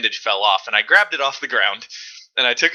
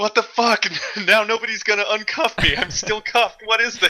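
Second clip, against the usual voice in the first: mock very high, shrill shouted yell; 10 semitones higher than usual. Retelling how a cuffed player yelled at a teammate during a game: retelling Alex's yell. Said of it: "Alex started yelling at him like".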